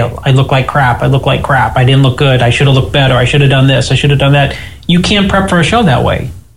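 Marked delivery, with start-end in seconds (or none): none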